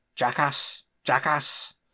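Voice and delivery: talking like a pirate. Voicing game dialogue as Suli, trying a voice: pirate voice. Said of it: "It sounds more like a pirate than it does Suli".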